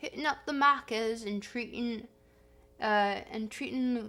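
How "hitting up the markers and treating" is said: fake Australian accent, heavily leaned into. Trying out an australian accent unpracticed in a long time: put-on australian accent. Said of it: "my Australian accent".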